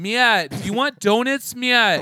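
put-on thick East Coast accent. Imitating your cousin talking to you, in Kristen's thick East Coast accent. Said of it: "had like a thick East Coast accent, and she'd be like".

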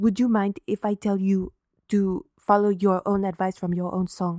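put-on English spoken with a Swiss accent throughout. Retelling a scene from a Reels channel reenactment: Marie Anne's Swiss accent. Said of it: "she has like this Swiss accent and she's like".

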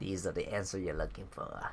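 soft, a bit creepy alien voice. Trying out voices while answering a question, in a Yoda voice. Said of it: "I think that's the Yoda voice".

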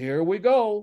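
mock weary, dismissive tone. Recalling a court hearing, the speaker quotes the judge's response to a cited case: imitating the judge's tone. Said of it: "Just like that".

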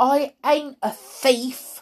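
slow, deliberate, high, drawn-out shout. A boy answers the adult who just joked at his expense: shouted. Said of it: "shouted George".

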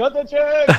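very high-pitched, gleeful crowd-like scream. Describing how the cast and crew end every scene, retelling a scream. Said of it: "they're screaming".

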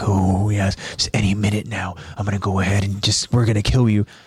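sinister, low, evil-sounding giant voice. Picturing Titans surrounding the scouts in the dark: smiling evil Titan voice. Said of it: "smiling at them, like".

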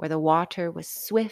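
ordinary delivery

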